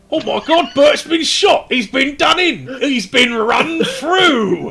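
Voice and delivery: shrill, very high, very loud yell. Voicing a cultist who sees an ally shot: shouting cultist. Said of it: "you hear a shout from the cultists".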